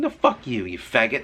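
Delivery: normal talking voice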